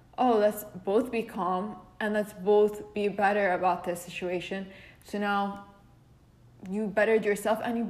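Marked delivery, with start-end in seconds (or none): none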